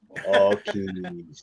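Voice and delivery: put-on creaky, seductive sexy voice. Imitating another speaker's ad read: imitating a sexy voice. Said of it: "he's got a sex voice on".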